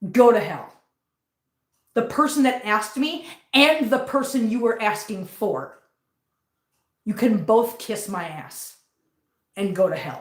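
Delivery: furious, voice shaking with anger. Telling off the person who lied about the cat: furious, shaking with anger. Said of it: "I am so pissed off".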